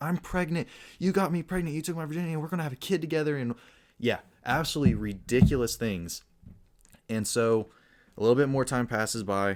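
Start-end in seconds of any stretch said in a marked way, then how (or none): 0.0-3.4 put-on crazed, high, fast, frantic screaming rant. Retelling a woman banging on a man's car window, imitating a woman screaming. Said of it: "screaming crazy things like".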